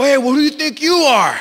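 prideful, offended, puffed-up indignant tone. Acting out getting puffed out when confronted: imitating a puffed-up, indignant person. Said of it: "puffed out".

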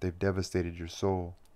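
plain reading voice

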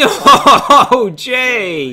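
very high, loud laughing yell. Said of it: "That was loud".

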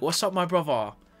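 fake British accent. Joking about Americans doing British accents, joke British accent. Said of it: "you can make like a joke about it".

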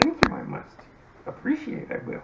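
high put-on character voice, sustained. Urged to keep doing the voices, thanking the group: Yoda voice. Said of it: "keep going with the Yoda voices".

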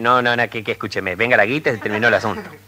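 ordinary talk

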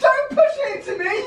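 very loud, very high panicked shriek. Dealing with something loose in the house, yelling at Chuck: screaming in panic. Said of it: "Just stop screaming!".

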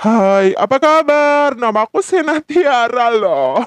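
pitch-bent effect voice.

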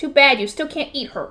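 ordinary delivery

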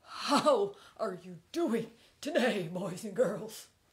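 loud talking horse puppet voice. Greeting the children as a talking horse puppet: Hank the horse voice. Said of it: "this horse does".

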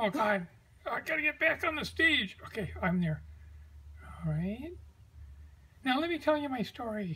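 very hushed, very quiet, tiny little puppet voice. In a sketch, a stranded puppet tries to get back onto the stage: little tiny marionette voice. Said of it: "Hi, I am a little tiny marionette".

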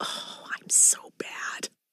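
hushed whisper. Trying a free sample in a shop: whispering. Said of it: "whispers about how bad she is".

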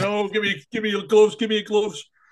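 put-on bratty, high-pitched little kid voice, screaming. Retelling a young kid at a match: imitating a screaming kid. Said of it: "he's screaming".

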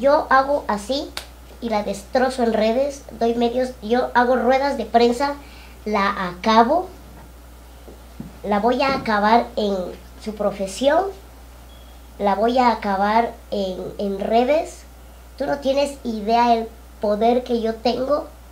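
ordinary talk

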